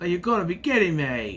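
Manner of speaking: put-on, very New Zealand accent. Quoting Bridget calling something out, the speaker repeats her line: imitating Bridget's New Zealand accent. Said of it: "so it comes out very New Zealand".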